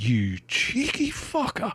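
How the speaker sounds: high, slow, drawn-out, indignant muttering.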